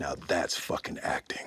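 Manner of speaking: low, hushed whisper spoken close into the ear. Retelling how he pulled the speaker in and whispered in his ear; retelling a whisper in the ear. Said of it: "he whispers in my ear".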